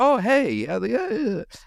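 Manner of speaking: very high, overly polite voice. Showing how she talks when overly polite or meeting someone new: raised, higher-pitched voice. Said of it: "I raise the pitch of my voice for some reason".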